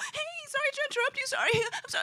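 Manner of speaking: play-acted very high, tipsy, over-eager drunk chatter. Retelling what a girl at a bar said: imitating a drunk, excitable girl. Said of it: "she was all drunk, you know, and all excitable".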